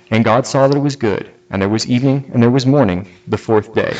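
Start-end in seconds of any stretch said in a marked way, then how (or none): none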